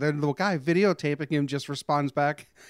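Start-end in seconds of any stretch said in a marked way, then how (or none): none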